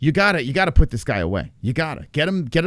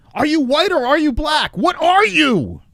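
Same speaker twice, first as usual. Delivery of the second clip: put-on shrill scream, very high-pitched; 13 semitones higher, 4 dB louder than usual. Imagining a drunk wife in a car: imitating someone screaming. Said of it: "Maybe she was screaming".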